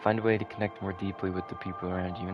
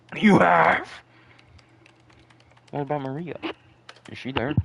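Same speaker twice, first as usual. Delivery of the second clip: mouth full, much higher, louder, slower; 8 semitones higher, 10 dB louder than usual. Asking about Maria after hearing a hideout was found, talking with mouth full. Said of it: "I'm I'm munching".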